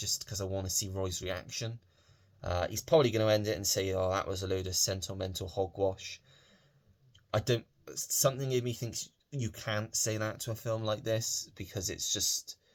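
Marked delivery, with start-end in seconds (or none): none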